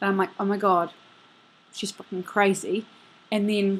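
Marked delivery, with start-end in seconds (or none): none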